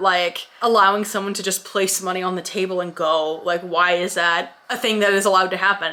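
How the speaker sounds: normal talking voice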